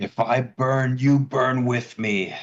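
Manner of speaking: high-pitched yelling. Voicing a character in combat as he uses an attack: yelling. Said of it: "he yells".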